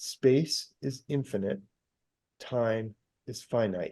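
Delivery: slow, deliberate, each word given its weight. Stressing a really important point to a listener, slow and deliberate. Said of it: "I'm going to say this slow".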